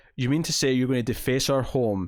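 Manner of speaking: normal talking voice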